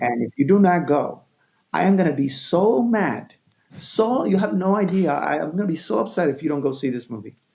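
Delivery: high-pitched, passionate pleading. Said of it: "spoken to them so passionately".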